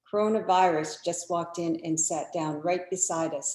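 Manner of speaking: usual speaking voice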